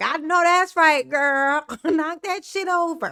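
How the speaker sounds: excited, hyped, egging-on voice. Imitating Trina cheering on bad behaviour: imitating Trina hyping. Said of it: "she's a great hype person".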